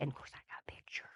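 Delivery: confiding, fast, soft whisper.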